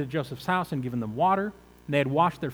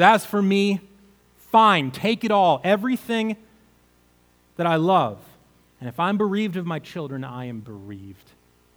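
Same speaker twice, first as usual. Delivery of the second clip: put-on resigned tone, slower; 5 dB louder than usual. Retelling Jacob's words at the end of this section; acting out resigned words. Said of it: "Jacob is resigned".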